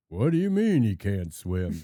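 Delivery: loud, challenging delivery. Retelling an old clip of John Wayne at a river: John Wayne voice. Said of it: "And John Wayne walks up, and he's like".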